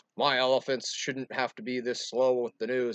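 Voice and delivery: loud, fed-up, pissed-off tone. Retelling the story, voicing the Goat King as he complains: mock-angry Goat King voice. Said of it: "the Goat King is pissed".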